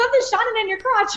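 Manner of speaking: put-on comic Irish accent, pitched very high. Retelling what someone on set said during the photo shoot: imitating Kat's Irish accent. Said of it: "Irish as well, so she's got this hilarious accent".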